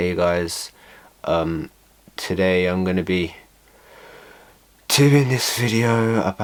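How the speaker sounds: flat, unenthusiastic drone with no spark. Showing how small channels sound when they lack enthusiasm, unenthusiastic. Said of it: "they just sound like this".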